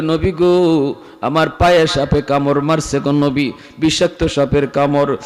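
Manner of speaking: ordinary talk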